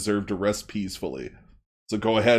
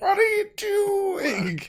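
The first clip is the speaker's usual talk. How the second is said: very high, slow, stretched-out, swooping voice. Voicing a dwarf who spots a player reaching into a body: Adam Sandler voice. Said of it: "old Adam Sandler from the nineties".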